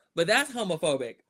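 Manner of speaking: ordinary talk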